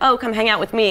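ordinary delivery

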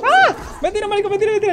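high, loud, panicked screaming.

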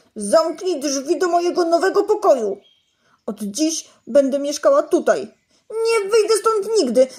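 loud, high, angry, offended, furious sulk. A little ball hiding in a kitchen cupboard, to Mom: furious and sulky. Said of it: "wściekła i obrażona kulka".

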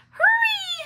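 very high, stretched, drawn-out panicked squeak. As the sun starts to set, she urges her friends to get home, squeaking in panic. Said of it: "Lily squeaked in panic".

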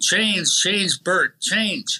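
play-acted slow, high calling-out yell. Retelling shouting at a player to change lines: imitating own yelling. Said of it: "At first we're yelling".

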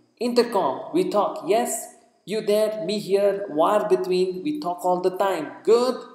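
loud, high-pitched yelling at full volume. Standing only inches away, a man keeps shouting at the top of his voice. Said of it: "Shouting away at the top of his voice".

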